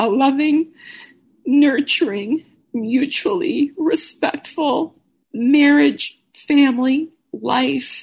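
speaking while weeping, high and tearful. Remembering a goodbye letter she once wrote, she keeps talking while crying. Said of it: "and I'm crying now".

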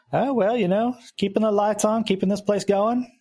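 put-on just a hint of a Southern accent. The man keeping the place going answers a greeting: slight Southern accent. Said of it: "He's a little Southern".

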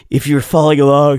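talking through a yawn. Speaker recapping tour shows for followers, yawning while talking. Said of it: "sorry, that's a yawn. I'm yawning right now".

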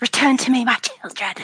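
high, hissing voice. Game narrator voices a creature calling her children back, hissing. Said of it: "she hisses".

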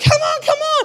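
mock yelled encouragement, very high, crowd-style. Recounting a scene with music playing, the speaker retells everyone yelling at each other. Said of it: "everybody's vibing and yelling at each other".

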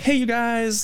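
very high, goofy, showman vlogger voice. Showing the voice settled on for the videos: goofy vlogger voice. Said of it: "quintessential goofy, like, vloggy kind of".

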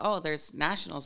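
plain

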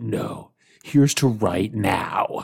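slow, rasping voice on the verge of breaking. Retelling how a movie character breaks down: imitating a raspy, breaking voice. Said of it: "that rasp in his voice".

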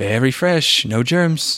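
slow, drawn-out delivery, each word stretched out. Retelling a movie line that sounded like Trump: Trump-like voice. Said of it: "he says it so much like Trump".

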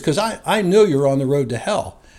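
ordinary delivery

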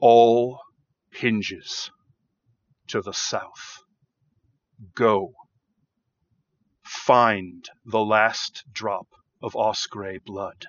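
deep, resonant, echoing creature voice. A narrator voices a beaked creature addressing the listener, deep booming resonant voice. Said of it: "this deep, resonant, booming voice".

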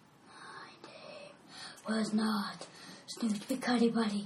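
faint, distant, hushed spectral ghost voice. Voicing a ghost that the players hear: faint ghost voice. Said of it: "And you hear a faint voice".

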